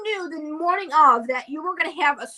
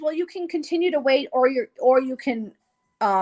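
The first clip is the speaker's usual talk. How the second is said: plain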